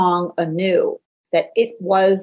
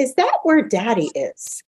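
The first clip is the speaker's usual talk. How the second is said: very, very high, swooping little voice; 5 semitones higher than usual. Retelling a family drive, doing daughter Rebecca's question in her very, very high voice. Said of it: "said in her very, very high voice".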